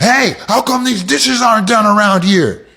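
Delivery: overly aggressive yelling. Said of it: "To be aggressive is to start yelling".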